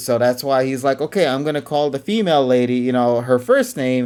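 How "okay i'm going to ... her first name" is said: plain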